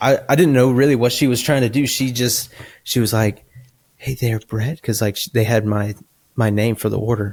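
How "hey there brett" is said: put-on very soft, gentle voice. Retelling a worker at his window greeting him, imitating her very soft voice. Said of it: "she has the softest voice".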